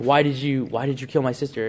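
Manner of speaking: plain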